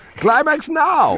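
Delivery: high, slow shout with Hungarian accent.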